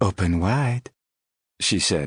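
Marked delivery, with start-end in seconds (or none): 0.0-0.9 mock seductive, sultry put-on French accent. Retelling what she said, in a mock-seductive French accent. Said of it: "in her most seductive French accent".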